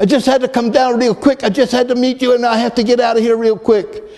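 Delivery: put-on broken English accent. Retelling what a man said to them when they met, in broken english accent. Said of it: "in a broken English accent".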